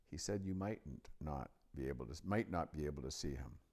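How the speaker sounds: ordinary delivery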